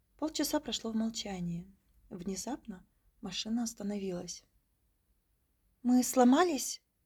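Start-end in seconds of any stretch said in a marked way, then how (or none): 5.8-6.8 very loud, sudden exclamation. A woman passenger exclaims as the taxi suddenly stops in a snowstorm. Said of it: "воскликнула женщина".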